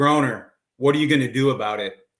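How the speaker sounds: put-on broad Texan accent, laid on thick. Recalling his roommate answering his complaints, Clint's thick Texas accent. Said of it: "in his thick Texas accent".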